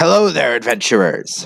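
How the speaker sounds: swashbuckling pirate-style dwarf character voice. Game master voicing a dwarf blacksmith greeting the adventurers, in a pirate-sounding voice. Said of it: "that sounds like a pirate".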